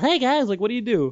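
high, nasal voice with snarky attitude. Imitating the cartoon character while asking about voicing him: Sonic the Hedgehog voice. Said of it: "Sonic is like".

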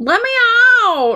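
mock very high, playful, jokey shout. Retelling how R. L. Stine pretended to be locked in the room. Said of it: "pretending that he was locked in that room".

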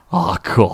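mock talking with full mouth. Retelling a movie character's reaction with ice cream: imitating talking with mouth full. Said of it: "he's got a mouthful of ice cream".

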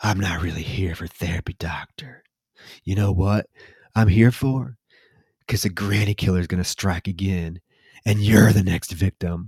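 as creepy as possible, sinister acted delivery. Retelling how a movie character talks to a doctor: imitating a creepy delivery. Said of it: "he's acting creepy".

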